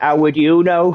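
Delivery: put-on Manchester accent, sharp delivery. He quotes Mule's comeback to the lecturing bombardier: Mule's Manc accent. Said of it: "Mule goes in his Manc accent".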